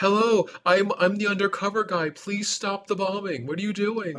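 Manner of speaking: high-pitched yelling. Retelling a movie scene: imitating yelling into a walkie-talkie. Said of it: "walkie-talkie yelling".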